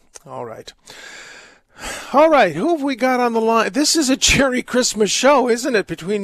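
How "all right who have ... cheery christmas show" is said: loud, high-pitched yelling. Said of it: "me yelling at everyone".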